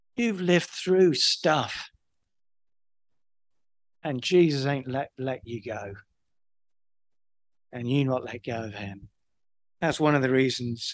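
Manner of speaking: tearful, low, soft, voice catching, choking up. Speaking to people in the room with a tear in the eye; teary, choking up. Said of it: "I got a tear in my eye".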